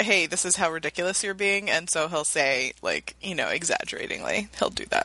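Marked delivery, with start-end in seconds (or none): none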